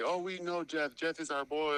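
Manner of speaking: acted, slow, stretched-out heckling call. Retelling what people yelled at them: imitating people yelling. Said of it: "they were yelling at us like".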